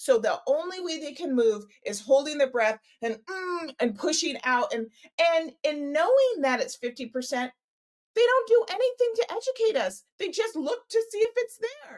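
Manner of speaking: worked up, agitated, pitch climbing. Speaker explaining a point in conversation, getting worked up. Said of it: "I'm getting worked up".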